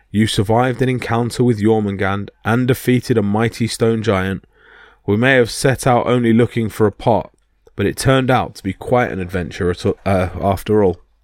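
ordinary delivery, nothing marked

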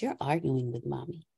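calm, very quiet, very low, even tone. Recounting what the speaker said to him when he was in tears, retelling calm speech. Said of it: "And I said in a calm voice".

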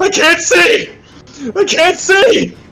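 very loud screaming. The game master voices a character who collapses grabbing his face: screaming as loud as ever. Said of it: "he screams as loud as you've ever heard him scream".

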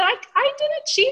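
mock-innocent voice, very high-pitched and squeaky.

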